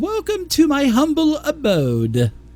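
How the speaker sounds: very high, swooping, sing-song nanny voice. Narrating a character who introduces herself as Nanny Poopoo; Mrs. Doubtfire voice. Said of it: "She sounded like Mrs. Doubtfire".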